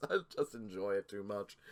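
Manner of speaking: low, soft, giggling voice. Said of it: "I can't stop laughing".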